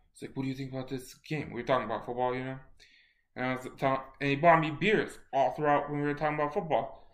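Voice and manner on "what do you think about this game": put-on very soft voice, much quieter. Retelling a football talk over beers, act out Barry Sanders in his very soft voice. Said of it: "Very, very soft voice".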